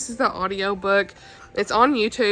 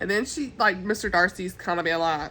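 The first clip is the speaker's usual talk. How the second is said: normal talking voice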